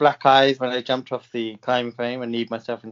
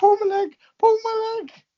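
put-on shrill screaming, pitched way up. Recalling when their leg got stuck, retelling a scream at the listener. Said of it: "I was screaming at you".

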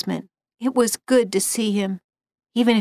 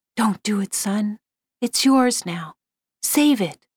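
hushed, close whisper. Narrator reads the plea spoken into the son's ear, whispered. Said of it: "I whispered in his ear".

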